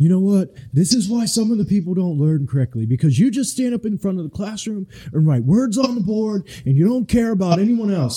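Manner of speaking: very high, furious, angry screaming rant. Retelling a video of a dude standing up, mock-screaming at the teachers. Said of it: "is like screaming at the teachers".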